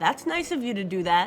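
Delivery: plain reading voice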